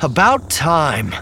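very high, loud, hoarse, rasping croak. Narrator reading a story; Mara, beneath Luke's feet, speaks in a hoarse croak. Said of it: "a hoarse voice croaked".

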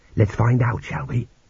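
ordinary delivery, nothing marked

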